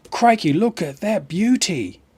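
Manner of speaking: rough, weak put-on Australian accent. Checking their stream and exclaiming, in a rough put-on australian accent. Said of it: "I can't do the Australian accent so well".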